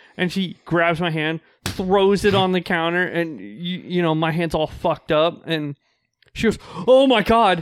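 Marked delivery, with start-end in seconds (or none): 6.9-7.6 play-acted sudden, high, loud, full-panic outburst. Retelling how a secretary reacted to an injured hand: imitating someone panicking. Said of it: "just full panic mode".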